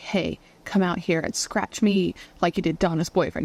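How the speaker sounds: ordinary talk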